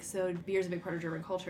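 plain

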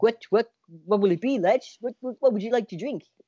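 terrible put-on Dutch accent. Telling a story, the speaker quotes a Dutch bartender in a terrible Dutch accent. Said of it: "terrible version of a Dutch accent".

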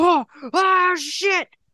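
mock screaming. Retelling how a first-time flyer reacted as the plane banked, acting out a scream. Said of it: "He's like screaming".

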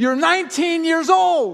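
high-pitched, livid, furious scream. Retelling throwing everything off the balcony, reenacting a livid scream. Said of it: "throw everything off of the balcony screaming".

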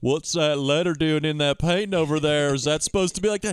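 totally innocent, guileless character voice. Imagining Forrest spotting a clue in a painting: Forrest Gump voice. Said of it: "And Forrest is like".

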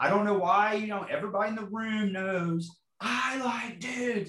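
mock high, all-out scream at the top of the lungs. Retelling the last words before driving off: retelling screaming as loud as possible. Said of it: "I screamed it as loud as I could".

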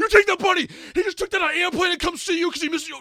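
crying, very loud, very high, shrill tearful yelling. Retelling a reaction to a movie scene in a theater: imitating own tearful yelling. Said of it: "in tears".

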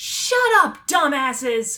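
very loud, high-pitched, intimidating shout. Voicing a character yelling at a jeering crowd: yelling very loudly. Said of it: "She yells very loudly".

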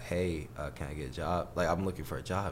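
ordinary delivery

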